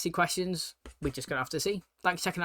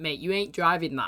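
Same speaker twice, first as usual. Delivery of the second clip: ordinary talk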